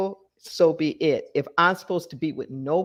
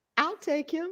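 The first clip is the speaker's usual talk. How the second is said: very high, small, soft, tiny little voice; 10 semitones higher, 6 dB quieter than usual. Retelling a class member's reply: imitating a little voice. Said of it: "I heard this little voice in my class go".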